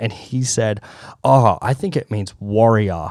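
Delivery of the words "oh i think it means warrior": mock dry, deadpan sarcastic delivery. Retelling what the director said when asked: imitating dry sarcastic delivery. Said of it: "the delivery was really dry".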